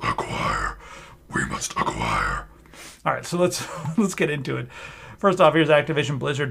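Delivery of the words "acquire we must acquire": slow, sinister, breathy, hushed evil whisper. Introducing a giant list of games a company acquired, evil voice. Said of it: "it sounds evil".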